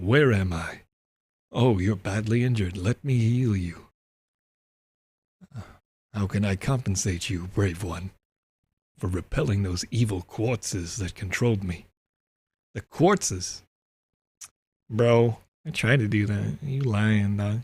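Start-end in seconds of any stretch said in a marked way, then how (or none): 0.0-11.8 deep put-on dragon creature voice. Playing a game, the speaker reads a dragon's lines in a dragon voice. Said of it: "Is this a good dragon voice?".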